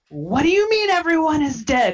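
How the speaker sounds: high-pitched yell. A player's character, mid-attack, yells at another character, yelling. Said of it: "I'm like yelling at Dantiir".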